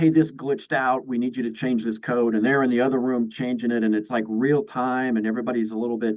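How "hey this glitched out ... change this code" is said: ordinary talk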